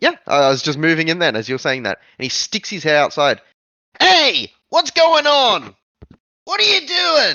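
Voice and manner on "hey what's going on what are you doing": very high, swooping put-on Brooklyn accent. Playing a character who sticks his head out of the house, in a brooklyn accent. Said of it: "Why was there a Brooklyn accent?".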